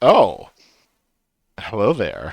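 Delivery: sing-song otter character voice. Voicing the otter dockmaster greeting a visitor: otter dockmaster voice. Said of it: "Does he say it like that?".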